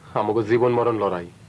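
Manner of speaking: plain reading voice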